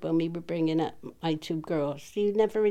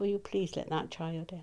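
put-on calm voice, quieter; 7 dB quieter than usual. Retelling what the speaker's dad said on opening the door: retelling dad speaking calmly. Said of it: "He says it very calmly".

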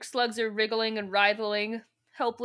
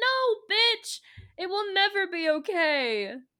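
put-on very high, slow, tearful sobbing; 9 semitones higher than usual. Telling how Cassie turned off the gas and saved them: imitating Cassie crying. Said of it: "and she's crying".

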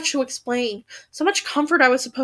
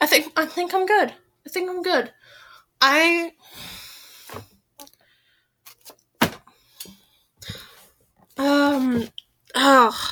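panicked, flustered, frazzled rambling, losing composure; 2 semitones higher than usual. Realizing the recording has run far over time: panicking. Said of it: "I'm panicking now".

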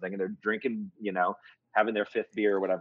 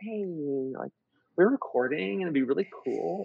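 high, coaxing, charming, persuasive voice; 9 semitones higher than usual. Retelling how Jen asked noisy neighbours to be quiet: imitating Jen's persuasive voice. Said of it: "she was using that voice".

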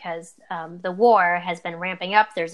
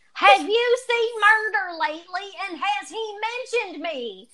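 acted-out, very high, drawn-out hollering; 13 semitones higher than usual. Retelling a story of a fan at a Q and A: imitating a fan yelling. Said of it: "she yells".

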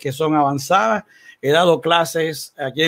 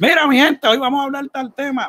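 put-on rustic country voice, much higher; 10 semitones higher than usual. Describing how the co-host starts in after the intro, in a plantain-farmer country voice. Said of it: "tú empiezas ahí con una voz de platanero".

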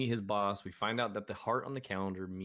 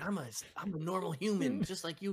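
put-on stuttering and stammering, pitched higher; 9 semitones higher than usual. Retelling a scene where Vision insists he is human: imitating Vision stuttering. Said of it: "he's stuttering and stammering".

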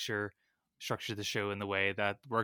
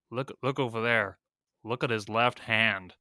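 exaggerated over-the-top American accent; 4 dB louder than usual. Retelling what a man across the way said to his wife, in an exaggerated American accent. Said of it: "in the most American accent you could think of".

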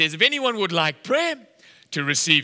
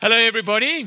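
mock MC-style announcing voice; 5 semitones higher than usual. Retelling how a man stood up at supper to get the hall's attention: retelling a loud announcement. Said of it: "he's like speaking in a loud voice".

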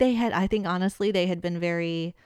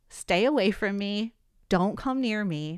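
put-on dead-serious, not-playing tone. Recounting what she told someone who was threatening her, retelling a dead-serious warning. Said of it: "I'm so not playing when I'm like".

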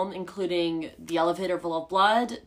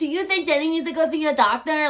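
scary, condescending menace, raised and high-pitched; 8 semitones higher, 5 dB louder than usual. Retelling a movie scene, imitating a condescending, scary tone. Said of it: "very condescending and scary".

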